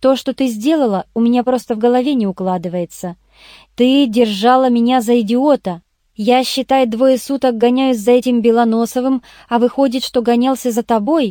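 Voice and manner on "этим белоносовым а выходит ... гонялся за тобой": ordinary delivery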